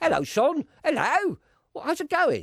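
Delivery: very high, put-on, fake English accent. Practising a greeting with his partner, he tries again in a put-on English accent. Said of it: "I'm supposed to be English".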